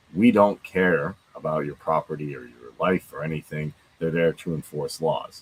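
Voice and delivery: ordinary talk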